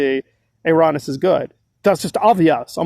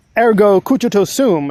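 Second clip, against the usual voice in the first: sarcastic, tongue-in-cheek, mocking mock-Latin flourish; 4 semitones higher, 4 dB louder than usual. Commentator addressing viewers, delivering a Latin phrase, mocking. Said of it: "as I like to mockingly say".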